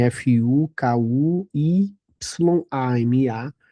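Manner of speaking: slow letter-by-letter spelling out.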